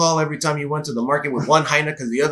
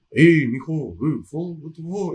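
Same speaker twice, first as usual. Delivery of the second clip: put-on slow, laid-back, old-school street drawl; 3 semitones higher than usual. Giving a shout out and describing how he talks, imitating Theo Pan. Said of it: "like veterano kind of sound".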